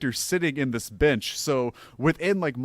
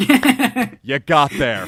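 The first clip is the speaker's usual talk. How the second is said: put-on expressionless, dead dry delivery at full volume; 9 dB louder than usual. Retelling what a golf caddy said after a double bogey: imitating an expressionless remark. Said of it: "stands there completely expressionless and just goes".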